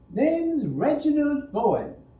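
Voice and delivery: very high, swooping, mocking put-on falsetto. Narrating a youth who rises and bows to Yayan, mimicking in falsetto. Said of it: "he mimicked in falsetto".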